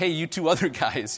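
put-on sarcastic tone. Retelling an order to throw the net over: imitating a sarcastic, spiteful tone. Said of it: "so maybe sarcastically, almost in spite".

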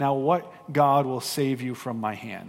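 mock sneering. Retelling how he sneers at Shadrach, Meshach and Abednego, mock sneering. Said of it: "he sort of sneers at them".

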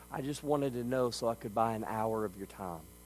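soft voice, mock fighting back tears. Retelling a story, voicing a little boy answering his furious dad, imitating holding back tears. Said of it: "fighting tears back in his eyes".

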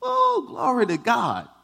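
shrill, very high, loud, fervent shout. Retelling a woman's testimony, speaker acts out her shouting; imitating a woman shouting praise. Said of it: "And she's shouting".

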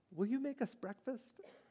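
put-on, very hushed, high, sweet, innocent voice. A narrator reads a five-year-old asking her dad a question, innocent, sweet voice. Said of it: "in her most innocent, sweet voice".

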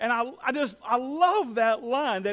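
ordinary talk

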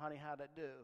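normal talking voice

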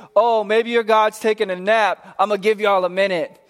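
mocking, taunting jeer. Retelling a prophet taunting rival prophets: imitating someone taunting. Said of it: "Elijah is taunting them the whole time".

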